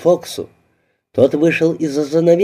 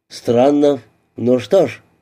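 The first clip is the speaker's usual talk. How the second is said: usual speaking voice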